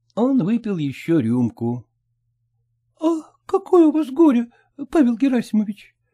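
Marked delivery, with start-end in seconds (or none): 3.0-5.9 shy, timid, hesitant voice. A woman, recovering from embarrassment, asks a man: timid question. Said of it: "робко спросила она".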